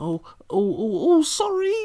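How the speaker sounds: sudden groveling, very high, loud and squeaky.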